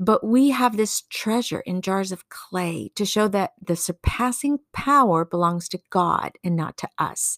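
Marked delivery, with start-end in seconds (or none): none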